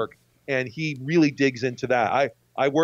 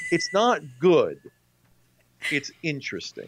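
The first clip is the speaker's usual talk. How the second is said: Minnesotan accent with swooping tune. Giving a short verdict on a film he saw: Minnesotan accent. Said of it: "You sound very Minnesotan right there".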